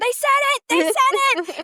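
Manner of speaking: very high, piercing scream. Retelling a cartoon scene where the main character screams: imitating Peter screaming. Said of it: "he starts screaming".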